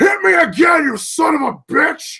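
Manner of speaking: high, loud, furious scream.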